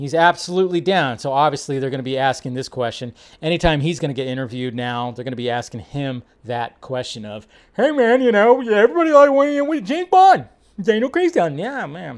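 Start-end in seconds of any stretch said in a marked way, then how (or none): 7.8-11.6 chummy, casual bro journalist voice, pitched up. Mocking how journalists will question him in interviews, doing an impression of a journalist. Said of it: "That was my impression of that".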